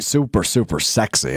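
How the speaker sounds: sarcasm laid on thick, heavy and dripping. Commenting on the Caleb Williams and Drake May battle, heavily sarcastic. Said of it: "I bet you can hear the sarcasm dripping from my voice on that one".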